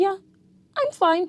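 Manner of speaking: very high, little voice with pitch lifting. Imitating someone who says they're fine when asked how they are, voice going a little high. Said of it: "their voice gets a little high pitched".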